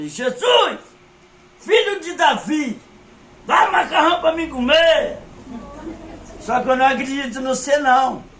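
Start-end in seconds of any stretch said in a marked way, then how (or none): 0.1-5.2 mock, forceful, high-pitched shouting with full force. Retelling a prayer cried out to jesus: retelling a forceful shout. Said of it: "Eu gritei, mas eu gritei com força".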